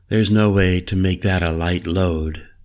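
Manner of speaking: ordinary delivery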